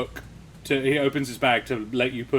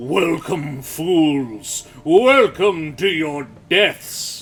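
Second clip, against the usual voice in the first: very loud, booming, slow, fiendish, malevolent screeching voice; 4 semitones higher, 8 dB louder than usual. Game master voicing what rings out when a player touches the ring pull, booming malevolent screech. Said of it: "a booming, loud, malevolent voice screeches out".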